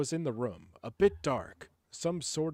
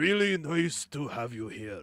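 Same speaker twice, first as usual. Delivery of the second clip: fake, put-on Japanese accent. Reading a girl's line of dialogue from a story, in a put-on Japanese accent. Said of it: "so I'll do a Japanese accent".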